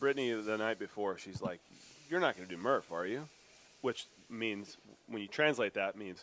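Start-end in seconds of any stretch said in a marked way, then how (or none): 2.1-3.3 sugary put-on voice. Retelling a question from the night before: imitating Brittany saying it sweetly. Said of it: "she says it really sweet".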